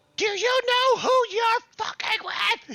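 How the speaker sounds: tiny, very high, squeaky screech. A character argues and screams at the listener, in a little high-pitched scream. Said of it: "He screams out in his little high pitched voice".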